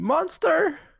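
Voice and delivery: high, loud scream of alarm. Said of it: "I'm just gonna scream".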